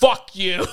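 loud, angry, sharp snap. Retelling how patrons answered a request to keep quiet: imitating angry patrons. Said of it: "they'd be so mad".

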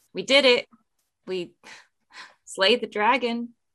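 announcing as if to a whole room. A game master voices a character announcing to the whole tavern; raised voice for the room. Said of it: "raise her voice a little louder so the whole room can hear".

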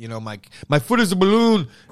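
bad, terrible Irish accent.

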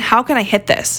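normal talking voice

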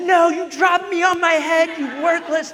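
high, loud mock toddler yell, blaming tone.

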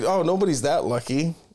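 ordinary talk

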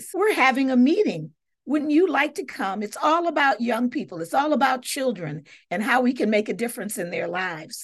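ordinary delivery

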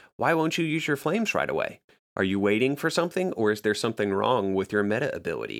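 put-on cutting, biting tone. Recounting what someone asked about not using flames, retelling a biting question. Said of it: "him kind of bitingly saying".

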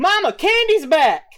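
very high, shrill, loud yell. Voicing a girl who spots a returning son: girl yelling. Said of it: "the girl yells".

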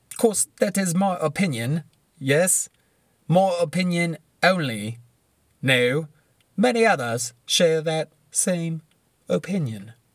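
put-on British accent, very slow and deliberate. Giving a fantasy football opinion, slipping into a british accent. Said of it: "I don't know why I went British".

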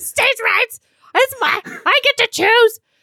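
put-on enraged outburst, very high, shrill, loud. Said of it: "she's so mad".

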